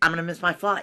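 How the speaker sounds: Arkansas accent, "going to" as "gonna", g's dropped. Showing someone being taught how to say the line: Arkansas accent. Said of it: "That's Arkansas".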